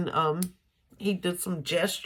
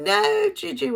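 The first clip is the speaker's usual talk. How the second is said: put-on very high, loud, upset kindergartner's voice; 14 semitones higher, 6 dB louder than usual. Retelling a kindergartner protesting at the next stop sign: imitating her getting upset. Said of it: "kinda getting upset".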